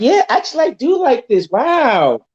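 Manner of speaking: put-on high, amazed girl voice. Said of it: "And I'm like".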